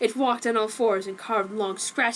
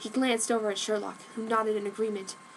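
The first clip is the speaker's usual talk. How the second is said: ordinary delivery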